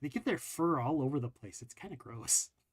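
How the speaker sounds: hushed, confiding, leaning-in whispered aside. A player's character leans over and whispers to another character: whispering. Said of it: "And I lean over and I whisper".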